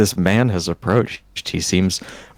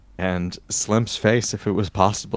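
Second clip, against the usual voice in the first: plain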